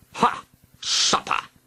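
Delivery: scrunched-up dragon monster voice. Narrator reading a dragon greeting the princess and her companion, scrunching dragon voice. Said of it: "cried the dragon in a scrunching voice".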